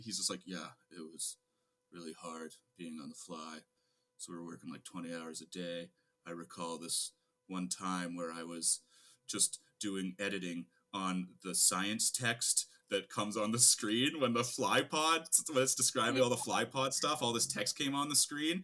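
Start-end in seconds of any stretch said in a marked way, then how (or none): 0.4-12.7 low, flat, dead-level droning monotone. Retelling a story an editor told, imitating the editor: imitating a monotone editor. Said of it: "this really monotone talking guy".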